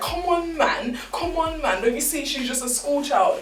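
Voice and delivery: high-pitched, pleading voice.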